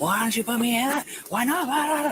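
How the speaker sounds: mock agitated outburst. Retelling what a detained woman said as she got amped up: imitating someone getting amped up. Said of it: "she started getting amped up again".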